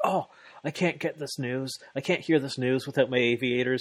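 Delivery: theatrical, hammy, over-the-top put-on panic. Retelling a wrestler's reaction to news of a match: imitating Kenny freaking out. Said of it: "Kenny's freaking out".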